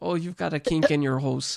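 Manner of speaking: Canadian accent slipping out on the word "hose". Telling the other speaker they sounded canadian and repeating their line, mock canadian accent. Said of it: "You sounded Canadian".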